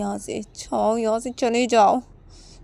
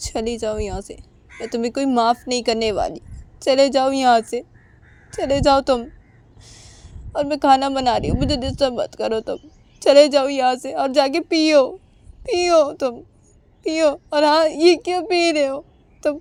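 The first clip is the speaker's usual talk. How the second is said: speaking through tears, higher; 3 semitones higher than usual. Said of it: "उमा की आंखों से आंसू गिर रहे थे".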